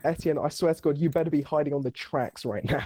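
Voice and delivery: ordinary talk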